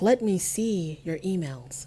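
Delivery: put-on cool, calm tone. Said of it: "she says very coolly, very calmly".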